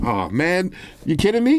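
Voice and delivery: slow, deflated, disappointed groan. Retelling own reaction when the phone failed to charge: retelling own disappointed reaction. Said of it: "I was like".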